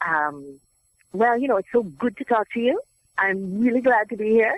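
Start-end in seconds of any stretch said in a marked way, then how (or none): 1.6-4.6 lilting, sing-song West Indian accent with shifted stresses. Explaining accents, giving an example of a general West Indian accent. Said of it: "a general West Indian accent would be something like".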